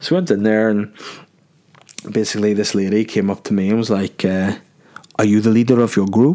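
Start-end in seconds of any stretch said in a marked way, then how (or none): 4.2-6.3 clumsy, very bad Dutch accent. Telling how a lady approached the speaker's group, in a bad Dutch accent. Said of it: "that was the worst Dutch accent ever".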